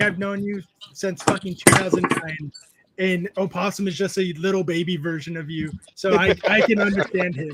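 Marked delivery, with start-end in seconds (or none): none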